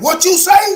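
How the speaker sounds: very high pitch, loud enough for all. Retelling the flight attendant's reply: imitating her saying it loud. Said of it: "Now she said it loud so everybody could hear it".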